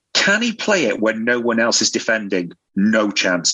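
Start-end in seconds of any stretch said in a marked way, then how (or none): 2.7-3.5 mock-stern delivery. Quoting someone's answer to a question, imitating a stern reply. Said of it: "Said that really sternly as well".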